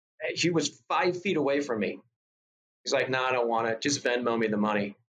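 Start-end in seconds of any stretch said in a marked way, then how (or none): none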